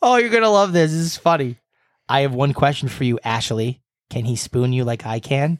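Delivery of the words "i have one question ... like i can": normal talking voice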